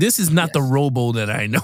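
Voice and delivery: put-on indignant, disgusted, let-down tone. Retelling own reaction to watching a sequel: imitating own disgusted remark. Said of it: "I'm disgusted going".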